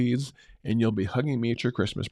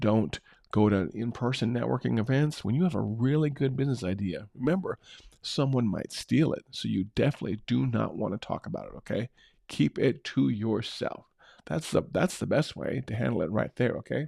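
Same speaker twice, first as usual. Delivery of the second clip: ordinary talk, nothing marked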